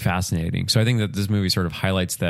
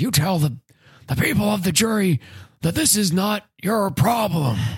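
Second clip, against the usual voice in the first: loud whisper-yell at a very high pitch; 13 semitones higher than usual. Recounting a movie scene of a lawyer yelling at a fat cat, [name]'s quiet yell. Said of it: "he's yelling at a fat cat quietly".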